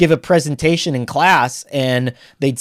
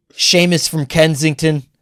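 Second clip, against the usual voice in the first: Philadelphia accent. Listing callers by name and neighborhood, philly accent. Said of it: "you do a pretty good accent".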